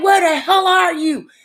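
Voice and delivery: put-on man yelling. Retelling a man yelling for Pat while the speaker is in the bathroom, retelling someone's yelling. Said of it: "he's steady yelling".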